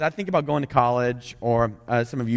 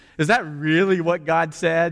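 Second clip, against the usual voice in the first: mock snide, sarcastic, snarky, doubting disbelief; 5 semitones higher than usual. Quoting the serpent's question to Adam and Eve: imitating a snarky question. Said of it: "it's snark".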